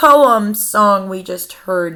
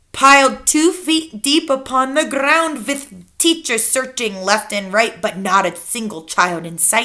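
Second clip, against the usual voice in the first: ordinary delivery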